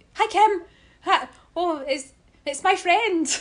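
sudden, loud, high, drawn-out blurted shout. Retelling calling out to Kim at the event: imitating own shout. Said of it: "I just shouted out".

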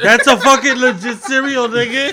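very loud, heated, full-volume yelling. Defending a cereal pick while the others mock it: yelling. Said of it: "Stop yelling".

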